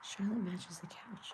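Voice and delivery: hushed, very quiet, barely-there whisper. Speaker on a live stream, whispering. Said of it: "I don't know why I'm whispering".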